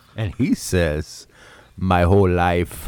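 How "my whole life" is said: imitated Jamaican accent. Retelling a story, voicing the man's reply to her question, jamaican accent. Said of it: "I guess I should do a Jamaican accent. I'll do him".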